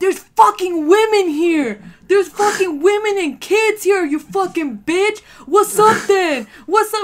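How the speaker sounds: furious yelling, loud and high.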